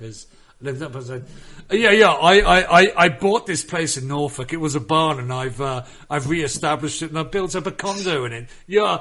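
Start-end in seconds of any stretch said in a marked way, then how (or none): 1.7-9.0 loud, high, boastful mock Norfolk accent. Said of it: "that's what a Norfolk accent now sounds like".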